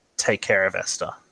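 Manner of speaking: faint, weak whisper, almost inaudible. Voicing a dying aunt's last words to a player: dying whisper, barely audible. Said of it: "and in a whisper so, so quiet that you can almost not hear it".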